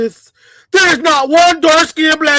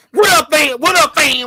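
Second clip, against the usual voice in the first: mocking put-on slangy voice; 3 semitones higher than usual. Imitating how a certain kind of man talks: imitating how they talk. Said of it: "That's how they talk".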